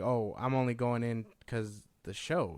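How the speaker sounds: normal talking voice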